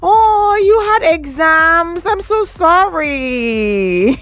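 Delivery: speaking through laughter. Replying to a listener's message about missing exams, laughing while apologizing. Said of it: "I'm sorry that I'm laughing".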